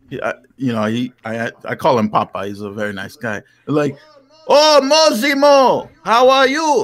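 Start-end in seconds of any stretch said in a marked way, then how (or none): 4.5-6.8 put-on high, bright Vietnamese accent. Telling about a man he calls Papa, imitating Papa's accent. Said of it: "he has like the accent".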